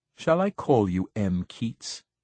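plain

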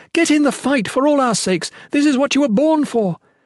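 very high, angry shout, anger welling up. The Shalane answers the man who pleaded for her magic, angry yell. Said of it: "the Shalane yelled, anger welling up within her".

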